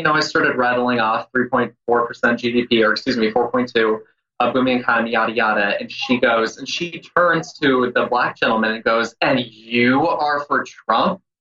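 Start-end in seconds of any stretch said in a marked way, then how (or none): 9.2-11.2 mock condescending tone, slower. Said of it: "just the way she said it was so racist".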